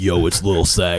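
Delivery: deep, slow, low bass voice. Retelling how a player greeted them online: imitating Lil Sack's deep voice. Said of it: "He has a deep ass voice".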